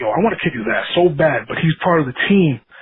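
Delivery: ordinary delivery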